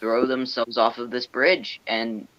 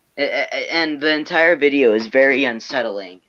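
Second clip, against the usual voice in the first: normal talking voice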